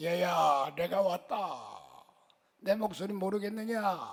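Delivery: put-on slow, drawn-out grandfather voice. Acting out a shaman speaking as a dead grandfather: imitating a grandfather's voice. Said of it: "할아버지 목소리를 똑같이 무당이 내요".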